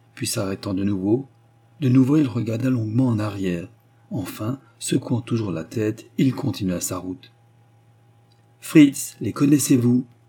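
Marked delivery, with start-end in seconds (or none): 8.6-10.0 commanding, insistent, peremptory, louder. Anna repeats her question to fritz, who will not answer; more peremptory tone. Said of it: "répéta Anna d'un ton plus péremptoire".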